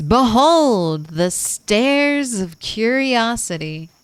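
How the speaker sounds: slow theme-park announcer voice. Line delivered in a theme park announcer voice. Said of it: "Theme park announcer voice".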